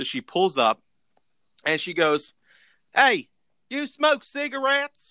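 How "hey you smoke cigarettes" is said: put-on very high, slow, thick heavy Southern accent. Retelling what she said on pulling up to Marco, imitating a thick Southern accent. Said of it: "she's got a thick like southern accent".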